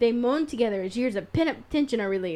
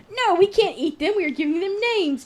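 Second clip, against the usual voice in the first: sudden high, panicked cry; 8 semitones higher, 4 dB louder than usual. Reading a story aloud, voicing a character's outburst, suddenly panicked. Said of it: "Emily cries, suddenly panicked".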